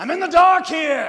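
shrill, very loud, high-pitched yelling outburst. Retelling a film argument scene where Al Pacino finally yells out: retelling Al Pacino's yell. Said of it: "Al Pacino yells out".

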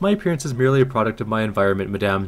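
ordinary delivery

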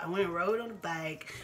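usual speaking voice

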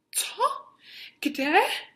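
sudden, high, startled, frightened exclamation. Mr. Windybank, as Holmes locks the door on him, exclaiming. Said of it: "Zvolal pan Windybank, zbledl".

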